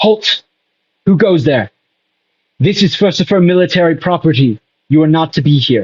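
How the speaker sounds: guard-like challenging tone. Voicing a guard who stops a player at a military post: soldier yelling a challenge. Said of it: "yell out to you".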